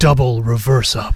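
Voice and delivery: slightly scratchy movie-trailer announcer voice. Bantering with the other speaker: movie theater announcer voice. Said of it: "That was my movie theater voice".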